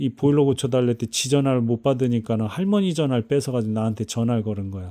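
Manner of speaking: ordinary talk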